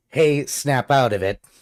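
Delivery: big, bad, puffed-up, commanding tough-guy voice. Shouting at another character in the game to snap out of it: commanding tone. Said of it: "In a commanding tone".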